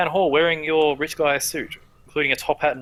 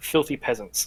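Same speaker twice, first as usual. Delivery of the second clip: muttered aside, loud enough to hear; 2 semitones lower, 4 dB quieter than usual. Storyteller voices a woman who sighs and points at the door, muttered under her breath. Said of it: "sort of like says under her breath".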